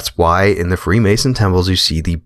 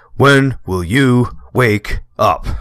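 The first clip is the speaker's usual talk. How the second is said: put-on pitched-up old radio broadcaster voice; 5 semitones higher than usual. Breaking off an explanation to deliver a line: Bill Cooper impersonation. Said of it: "that was my Bill Cooper impersonation".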